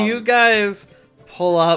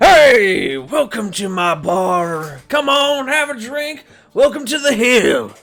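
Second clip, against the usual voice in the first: loud, booming, hearty voice; 5 semitones higher, 3 dB louder than usual. Voicing a bartender greeting the players at the door: big old booming greeting. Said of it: "You hear a big old".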